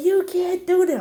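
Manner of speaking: mock very high, shrill, tearful yell. Retelling being embarrassed by her mother, imitating her own past yell. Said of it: "And I'm yelling".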